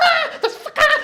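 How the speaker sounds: very high, chicken-like voice. Showing how someone redoes their angry line as an exercise: chicken voice. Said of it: "Do the whole thing with the chicken voice".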